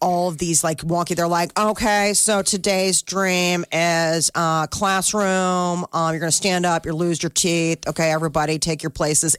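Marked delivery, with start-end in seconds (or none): 1.6-9.4 mock bored, tired, half-hearted delivery. Imitating dream crew members setting up a scene: imitating a bored, phoning-it-in delivery. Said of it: "they're just, like, phoning it in".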